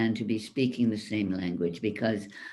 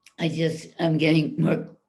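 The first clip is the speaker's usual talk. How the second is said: high-pitched voice cracking mid-phrase; 5 semitones higher than usual. Giving a recap when called on next, voice cracking. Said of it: "whoa, I lost my voice".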